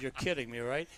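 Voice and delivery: ordinary talk, nothing marked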